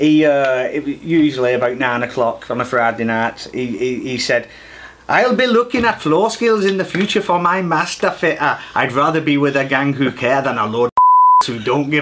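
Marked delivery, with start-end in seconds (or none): 5.1-12.0 put-on Welsh accent, pitched higher. Quoting what a man said, doing the speaker's best put-on welsh accent. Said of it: "That's my best Welsh accent".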